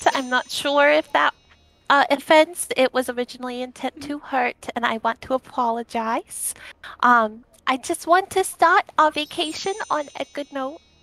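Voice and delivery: quiet in-character speech. Voicing Delphi speaking to Crucial: quiet voice in character. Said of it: "very quietly to him goes".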